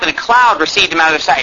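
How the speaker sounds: cloud stressed with a falling tune.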